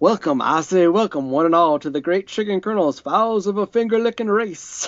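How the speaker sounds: cartoon rooster voice with rapid patter. Imitating a costumed colonel's speech pattern: Foghorn Leghorn voice. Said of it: "professional Foghorn Leghorn impersonator".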